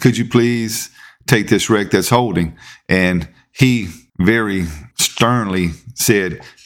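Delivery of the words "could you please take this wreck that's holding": put-on sweet, nice, pleasant voice. Retelling the dispatcher's radio request to a driver, imitating a sweet, nice voice. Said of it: "she really asked him nicely".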